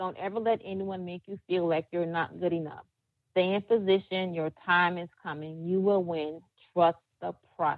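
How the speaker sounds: ordinary delivery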